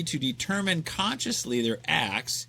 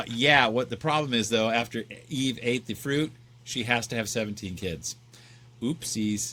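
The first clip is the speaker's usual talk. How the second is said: plain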